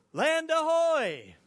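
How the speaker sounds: play-acted very high yell, "ahoy" held long. Telling a story, act out one of the drifting men at their moment of truth, retelling a man's yell. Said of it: "And so when they're facing their moment of truth, it was right then, one of the men yelled out".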